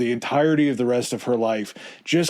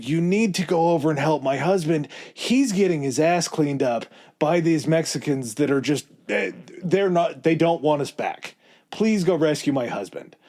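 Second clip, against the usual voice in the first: mock urgent, desperate, imploring, begging delivery; 4 semitones higher than usual. Retelling how a wife begged others to rescue her husband: imitating someone pleading. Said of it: "pleading in France".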